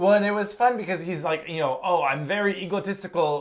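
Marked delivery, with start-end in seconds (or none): 1.8-3.4 put-on French accent. Quoting a character from the movie in a put-on French accent. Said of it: "like, a French accent".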